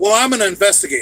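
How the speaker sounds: loud, defensive retort. Replaying an earlier reply about being an investigator, mock-defensive tone. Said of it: "I said it in a defensive manner, like I just repeated".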